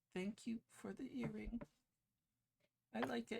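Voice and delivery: very high, soft, hushed half-whispered voice. Narrating a game, voicing Midnight inside Naya's head, half-whispered Midnight voice. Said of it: "a whispered voice of midnight saying".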